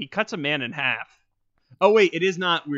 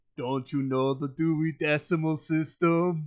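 put-on stern parody of Austrian accent. Retelling what a man said while holding someone up, in Arnold parody voice. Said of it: "In like a Arnold parody".

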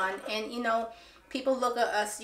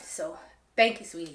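choked-up voice breaking into tears; 5 semitones lower than usual. Thanking another creator for the courage to keep going, starting to cry. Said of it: "I said I wasn't gonna start crying".

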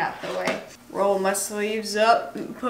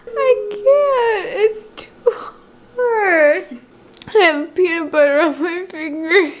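actually in tears, sobbing, loud and high-pitched; 8 semitones higher, 8 dB louder than usual. Struggling with peanut butter on a finger, while crying. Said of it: "I am actually crying".

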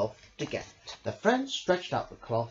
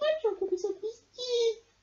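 giggled through, very high voice. A mouse remarks about the badger, giggling. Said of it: "Mouse giggled".

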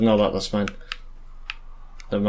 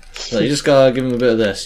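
ordinary talk

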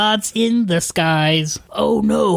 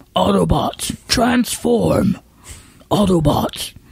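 attempted put-on robot voice. Trying the robot leader's battle cry: attempted Optimus Prime voice. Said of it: "See, I can c-, get close".

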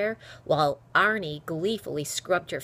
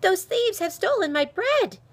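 gasped out, very high-pitched, loud and pleading; 6 dB louder than usual. Running up to two soldiers on a shop's steps: gasped. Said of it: "she gasped".

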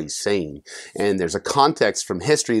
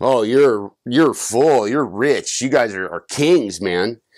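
mock sarcastic tone; 2 semitones higher, 3 dB louder than usual. Retelling a letter's words to proud listeners: imitating a sarcastic tone.

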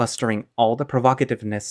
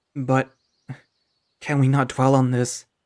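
quavering, trembling voice; 2 semitones higher than usual. Narrator reads a serious man's line to the companion comforting him: quivering voice. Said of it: "He asks with a quivering voice".

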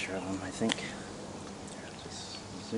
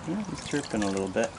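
ordinary talk

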